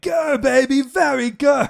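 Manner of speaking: very high, very slow, drawn-out, silly flirtatious tone. Discussing a movie's goofy humor, quoting its hero: Austin Powers impression. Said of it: "him being like".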